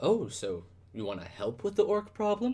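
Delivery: cowering, nervous, timid voice, high rising pitch. In a tabletop game, a townsman cowers before a half-orc player character: cowering townsman. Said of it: "He cowers a little bit at your stature and that you're a half orc. / He cowers a little bit at your stature and that you're a half orc".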